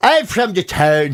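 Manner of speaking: put-on Dundalk Irish accent. Answering a request for a Dundalk accent: Dundalk accent. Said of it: "Give us your Dundalk accent".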